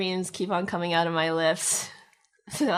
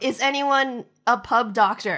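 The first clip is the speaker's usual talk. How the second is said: loud, high-pitched shout; 5 semitones higher, 6 dB louder than usual. A player's character slams open a door into a crowded pub: yelling. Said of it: "I slam the door open and I yell".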